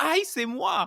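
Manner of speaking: shrill, very high, loud yell. Retelling calling out during a workshop: imitating own past yell. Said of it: "I just yelled out".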